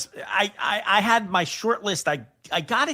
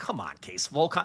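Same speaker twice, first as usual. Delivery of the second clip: muttered grumble under breath, lower and quieter; 5 semitones lower, 6 dB quieter than usual. Retelling reading a friend's list, imitating own grumbling under breath. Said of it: "grumbling under my breath".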